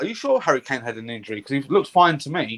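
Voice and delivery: ordinary talk, nothing marked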